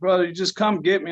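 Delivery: play-acted weepy, tearful, crying, pleading voice. Retelling a sister's phone call asking to be picked up: imitating someone crying. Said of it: "and she's crying".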